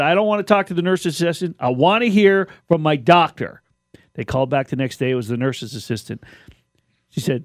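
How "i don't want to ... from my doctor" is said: normal talking voice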